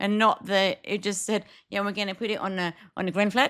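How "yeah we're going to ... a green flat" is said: fast, rushed, run-together words rattled off in a blur. Retelling the other speaker's WhatsApp message, imitating fast speech. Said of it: "like that".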